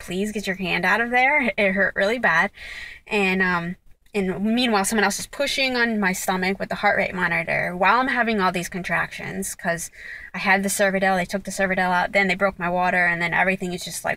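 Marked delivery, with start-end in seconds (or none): 0.0-1.5 pleading, begging tone. Retelling asking someone to remove her hand: retelling own begging. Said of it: "and begging, like".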